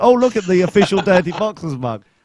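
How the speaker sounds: acted, smug, preening, look-at-me showing-off exclaim. Teasing a friend over a mug: imitating Tory showing off. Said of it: "parade around".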